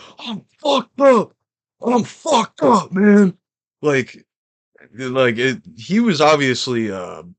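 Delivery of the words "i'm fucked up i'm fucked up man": wild, high screamed rant. Telling of a man coming towards them, the speaker quotes him: imitating a man screaming. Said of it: "he's like screaming".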